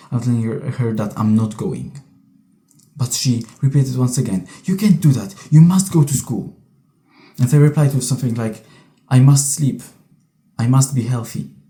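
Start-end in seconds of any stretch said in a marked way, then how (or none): 9.1-11.5 mock shaky, trembling voice. Recounting a past refusal to go to school, imitating own shaky voice. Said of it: "with this shaky voice".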